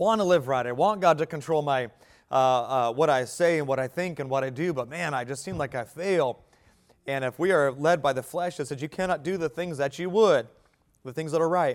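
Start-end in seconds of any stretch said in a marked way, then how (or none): none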